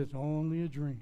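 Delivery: demonic character voice. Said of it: "or the devil said".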